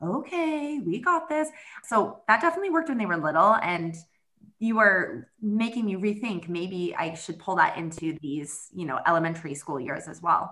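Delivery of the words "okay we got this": very slow, zombie-like, soft, soothing, calming murmur. Recalling calming the kids when they were little, retelling a soft calming voice. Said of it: "in a really soft, like calming, almost like a zombie voice".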